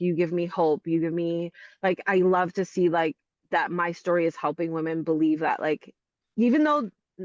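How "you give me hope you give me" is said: ordinary talk, nothing marked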